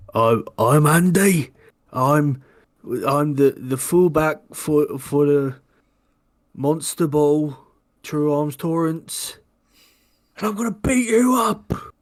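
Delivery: put-on very slow, drunk-sounding voice. Voicing a drunk opponent introducing himself before a fight: drunk character voice. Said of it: "he's drunk".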